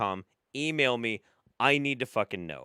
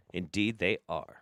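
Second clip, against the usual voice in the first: usual speaking voice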